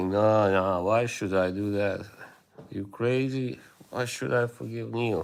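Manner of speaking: usual speaking voice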